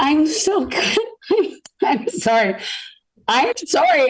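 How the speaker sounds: tearful crying, voice breaking, high and slow. An interviewer meeting a ninety-one-year-old star, crying with voice breaking. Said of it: "I'm crying right now".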